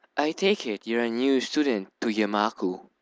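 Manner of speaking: relaxed, confident, calm and gentle voice. Reading a story aloud, voicing a character who greets a new student, in a calm soft voice. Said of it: "maybe the calm voice is way too soft".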